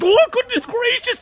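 very high-pitched, loud panicked outburst. In a role-play scene, a character answers another's demand, panicked. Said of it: "He panics at that".

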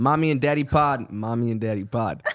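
put-on New York accent. Podcast host saying the show's name to listeners: New York accent. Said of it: "What was that like New York accent?".

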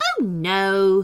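ordinary delivery, nothing marked

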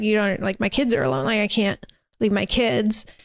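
put-on tearful voice, sobbing. Retelling a woman pleading to go home to her kids: imitating someone crying. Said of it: "She's crying".

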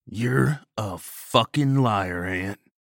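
slow, drawn-out, sneering and scornful tone. Narrator reads a man's taunt during a confrontation, sneering. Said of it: "he sneered".

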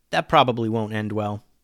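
plain

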